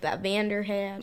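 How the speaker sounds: put-on Texan-accented delivery. Chatting about Vander's big fist gloves, repeating the line in a Texan accent. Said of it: "I just got like a Texan accent".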